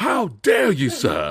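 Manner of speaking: put-on slow, super overdone British accent, laid on thick. Retelling what a man said when someone walked in, super overly British accent. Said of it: "Like super overly British".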